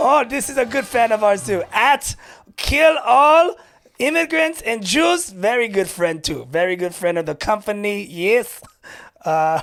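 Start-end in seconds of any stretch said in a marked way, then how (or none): 0.0-8.0 unconvincing put-on German accent. Reading out fans' Twitter handles on a stream, in a bad German accent. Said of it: "you're not digging this accent".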